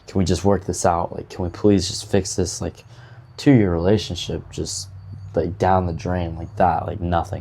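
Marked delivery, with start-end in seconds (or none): none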